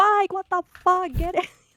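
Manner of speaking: mock shrill, very high, level-pitched screaming. Retelling a friend's wife yelling at him during a drone attack: imitating a wife screaming. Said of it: "She's just screaming in the background".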